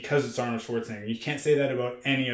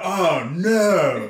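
the word "no" drawn out long; 6 semitones higher, 8 dB louder than usual. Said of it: "Ron will be like".

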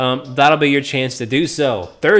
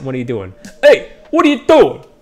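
put-on New York accent with swooping pitch; 4 dB louder than usual. Host calling out to players on a game server, in a New York accent. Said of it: "That's my New York accent".

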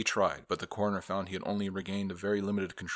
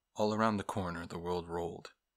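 plain

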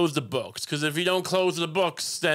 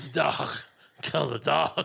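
mock strained voice, barely able to talk. Acting out a dying parent with throat cancer: mock strained barely-able-to-talk voice. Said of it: "you can barely talk 'cause you have throat cancer".

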